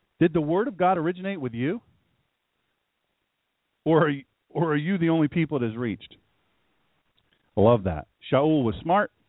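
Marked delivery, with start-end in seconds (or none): 0.2-6.2 lightly sardonic, sarcastic, taunting tone. Rereading a pointed question after being asked about sarcasm: sarcastic. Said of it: "a little bit of sarcasm".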